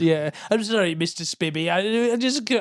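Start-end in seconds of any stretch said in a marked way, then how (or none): 0.5-1.7 put-on suburban housewife voice, pitched up, halting, apologetic. Acting out a suburban housewife apologizing to a drug dealer: put-on voice of a housewife. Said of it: "I'm giving them all the same voice".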